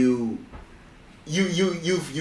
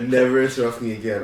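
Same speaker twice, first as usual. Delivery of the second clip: normal talking voice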